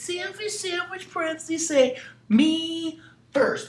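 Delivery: very high, slow, squeaky selfish-witch voice. Recapping today's math lesson, voicing the selfish parentheses witch in a squeaky witch voice. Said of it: "she gets her squeaky voice on".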